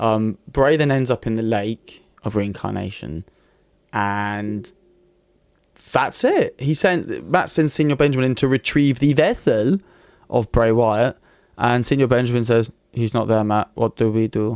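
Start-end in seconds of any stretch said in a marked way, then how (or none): 12.9-14.6 mock flat deadpan delivery. Retelling what a character says in a storyline: retelling deadpan delivery. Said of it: "very deadpan".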